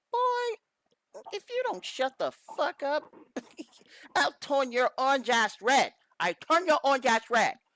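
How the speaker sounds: put-on deliberately poor Chinese accent. Speaker voicing what one man's look says to another: worst Chinese accent. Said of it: "It's probably my worst Chinese accent".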